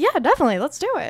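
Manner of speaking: high, squeaky cartoon-style voice. Retelling her agreeing to the plan, in a Mickey Mouse voice. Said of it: "What was that voice that I just said? ... Sound like Mickey Mouse".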